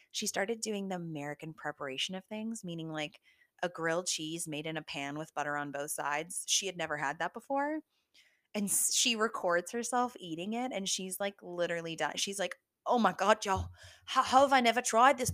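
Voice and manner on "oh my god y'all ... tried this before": loud, really bad fake British accent, half Australian. Quoting a woman eating a pan-fried grilled cheese, in a bad British accent. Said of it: "that was a really bad british accent i think that was more australian".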